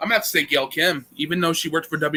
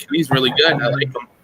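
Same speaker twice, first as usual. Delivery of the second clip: ordinary talk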